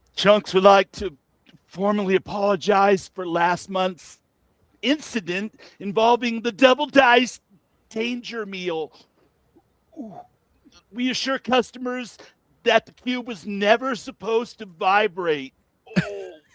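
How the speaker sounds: put-on painfully full voice. Reading a statement when asked to sound painfully full after a holiday meal. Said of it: "painfully full after a holiday meal".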